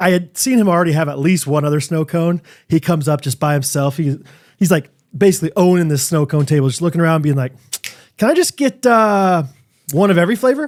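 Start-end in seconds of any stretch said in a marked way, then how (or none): 8.2-10.7 put-on high, polite little-kid voice like a six-year-old. Retelling what a six-year-old kid asked at the snow cone table: imitating Banner. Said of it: "the way he said it".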